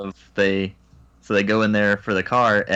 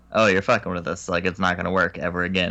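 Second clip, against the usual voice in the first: ordinary delivery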